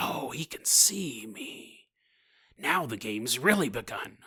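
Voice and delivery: edgy, low, very quiet, hushed, slow, drawn-out. Voicing a creature realizing it can be seen, do an edgy, bad Joker impression. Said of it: "edgy, bad Joker impression".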